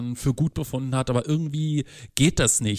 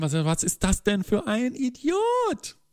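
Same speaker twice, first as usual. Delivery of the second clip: much higher, slow, drawn-out woman's voice. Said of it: "was muss die sich gedacht haben".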